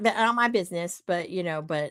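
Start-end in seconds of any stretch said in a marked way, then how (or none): 0.0-1.0 put-on mimicked Boston accent. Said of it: "and you mimicked him".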